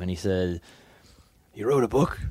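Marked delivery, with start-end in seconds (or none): 1.5-2.2 rough, raspy voice. Retelling what the talent scout said at a wrestling tryout: imitating talent scout's raspy voice. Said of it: "he has the most raspy voice".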